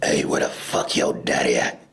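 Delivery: very low phone voice, dropped right down. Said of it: "he'd be like".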